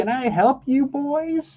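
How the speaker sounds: put-on very high, sweet, kindly old grandma voice. Showing someone how to voice an old woman: sweet old granny voice. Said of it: "just a sweet old granny, I think would be fine".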